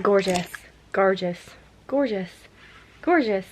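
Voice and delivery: gorgeous in clumsy attempted southern Irish accent. Speaker practising how to say one word, trying an irish accent. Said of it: "I've just fucked up an Irish accent".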